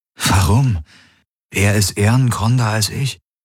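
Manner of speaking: ordinary delivery, nothing marked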